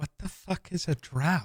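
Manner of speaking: stage whisper, loud. Leaning over to Thren with a question others can hear, loud stage whisper. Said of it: "kind of whisper, but not quietly enough".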